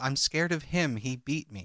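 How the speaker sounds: ordinary talk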